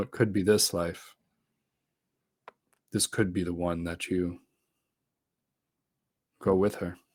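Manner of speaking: voice kept low. In a game scene, a character speaks while playing with the fire's sparks, low voice. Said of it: "I say just in a low voice".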